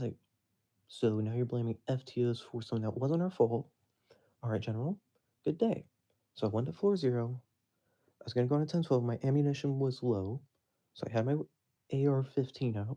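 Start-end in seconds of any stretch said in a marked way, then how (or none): none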